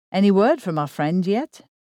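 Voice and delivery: ordinary delivery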